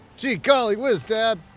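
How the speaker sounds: put-on very high, loud, slow kid voice. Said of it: "have you ever seen The Rifleman?".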